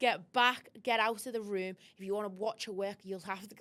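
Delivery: loud, angry outburst. Speaker acting out a protective man's outburst, retelling an angry outburst. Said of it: "he went off".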